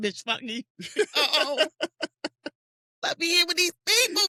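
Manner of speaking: mock distraught sobbing, crying outburst. Retelling a man's reaction, imitating him crying. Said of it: "And he was just crying".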